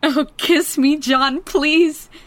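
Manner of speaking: tearful crying voice, high, slow, drawn out. In a love scene, Mary speaks to John, crying. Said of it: "You're crying".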